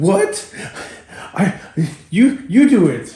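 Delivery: acted, very slow, hesitant, high, frightened stammer. Retelling her reply when told to go race: imitating her scared. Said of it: "So she's scared".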